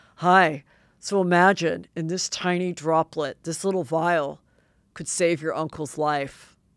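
put-on deep voice. Showing the impression she loved doing of the woman on trial: impression of her deep voice. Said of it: "'cause I loved doing her".

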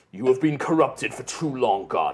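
callous paladin character voice. Voicing a callous paladin who speaks to a corrupted enemy: paladin character voice. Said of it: "he's just like".

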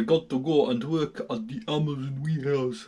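poorly done put-on Russian accent. Getting dressed for work, the speaker talks to viewers in an awful Russian accent. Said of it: "that's an awful accent".

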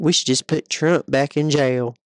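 put-on country accent. Repeating what they said in their YouTube short, in a country accent. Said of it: "saying in a country accent".

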